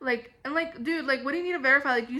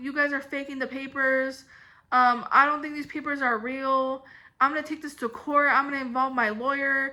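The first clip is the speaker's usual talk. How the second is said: usual speaking voice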